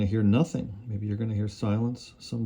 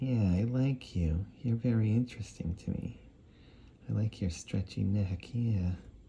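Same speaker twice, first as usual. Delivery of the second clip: soft, creepy, weird-guy character voice; 5 dB quieter than usual. Showing how the little creepy mouth shapes the character, in a creepy weird guy voice. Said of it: "that voice just comes from that one little creepy mouth".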